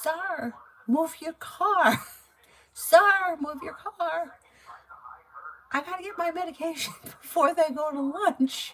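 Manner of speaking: very high, slow, drawn-out hollering. Retelling someone yelling at the car ahead to move: imitating someone yelling. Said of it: "she's yelling".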